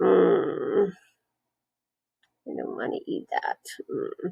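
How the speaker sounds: slow whispered grumble under the breath. Demonstrating how you grumble about a disliked dinner, grumbling. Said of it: "It's a grumble".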